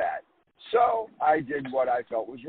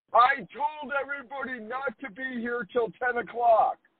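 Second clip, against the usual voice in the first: very high, shrill, scolding yell; 11 semitones higher than usual. Retelling how a woman jumped out of her car: imitating a woman yelling. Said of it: "starts yelling at us".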